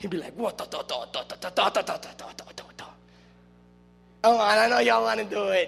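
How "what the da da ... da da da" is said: whispered, breathy da-da-da nonsense-syllable babble. Retelling how a movie character dressed as Scarface talked: Scarface impression. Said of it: "He would make a character".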